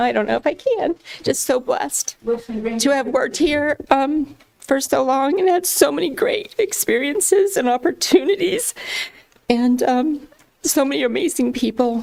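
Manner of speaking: choked-up voice, thick with held-back tears. Leaving a long-held job and thanking the people there, choked up. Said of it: "I am so choked up right now".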